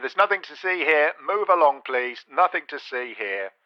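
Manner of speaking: soft announcer voice, as through a megaphone. Presenting a series of robot voices, this one a megaphone voice. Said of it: "And Megaphone here".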